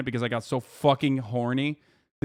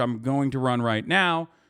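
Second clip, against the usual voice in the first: ordinary talk, nothing marked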